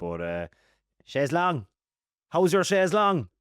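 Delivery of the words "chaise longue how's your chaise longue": Limerick accent, pitched up. Speaker trying French furniture names in a Limerick accent. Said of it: "in a Limerick accent".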